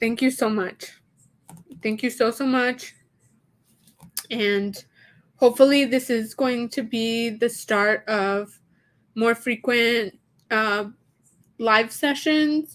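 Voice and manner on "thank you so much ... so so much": crying through tears, faster. Thanking a viewer for sharing a collection during a live session, crying. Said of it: "sorry that I'm crying".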